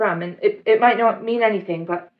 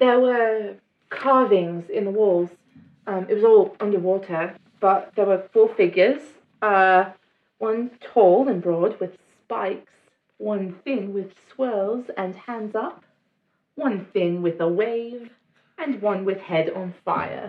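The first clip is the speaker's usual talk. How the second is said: posh British newsreader voice. Sharing what was carved on the walls, the speaker slips into a posh BBC newscaster voice. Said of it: "You just turned into a BBC newscaster".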